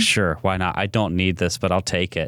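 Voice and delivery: ordinary talk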